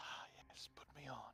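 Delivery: very quiet, soft whisper. Voicing a pendant that whispers into a player's mind: whispering voice in the mind. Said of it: "You hear a whisper in your mind".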